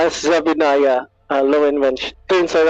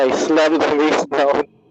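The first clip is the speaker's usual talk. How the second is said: ordinary delivery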